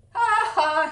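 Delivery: loud, high, mocking jeering laugh. A cheetah who got to the tree first jeers at the other animals arriving behind him. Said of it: "he jeered".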